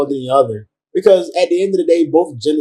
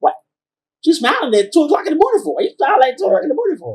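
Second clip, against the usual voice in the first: mock little old lady voice, higher; 13 semitones higher than usual. Mocking the other speaker's questions: imitating a little old lady. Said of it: "you sound like a little old lady now. Like".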